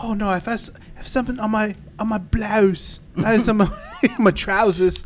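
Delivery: terrible put-on English accent. Retelling something an actress said, terrible Emily Blunt English accent. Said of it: "terrible English accent".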